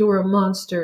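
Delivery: ordinary talk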